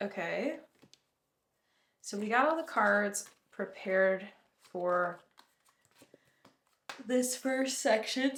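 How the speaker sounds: words pulled out mid-yawn, talking through yawn. Preparing oracle cards for the next section of a reading, yawning while speaking. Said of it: "Sorry, I'm yawning".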